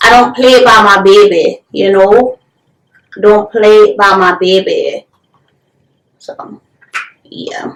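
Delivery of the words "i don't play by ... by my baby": put-on New Orleans accent. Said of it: "that's my accent".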